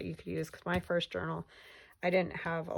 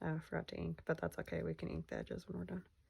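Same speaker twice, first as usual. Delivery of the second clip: muttering, mumbling under breath, much quieter; 8 dB quieter than usual. Talking while working on a glue project, mumbling. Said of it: "Sorry if I was mumbling".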